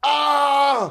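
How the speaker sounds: sudden, high, loud scream.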